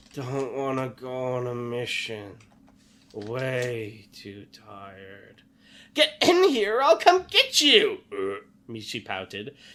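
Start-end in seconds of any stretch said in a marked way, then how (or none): 0.1-5.4 weak mumbling groan, much slower. A narrator reading a story aloud, voicing a character's reply, with a weak mumbling groan. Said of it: "A mumbling voice ... he groaned weakly".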